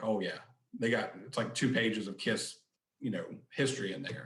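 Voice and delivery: ordinary talk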